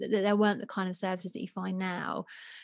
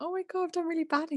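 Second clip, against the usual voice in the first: high, near-tearful voice, on the verge of tears; 9 semitones higher than usual. Retelling a phone call to a sister about first-year results: retelling being almost in tears. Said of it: "kind of almost in tears".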